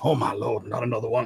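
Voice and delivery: quiet, barely audible mutter under the breath. Voicing the mayor muttering so no one hears: quiet muttered voice. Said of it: "in a quieter voice".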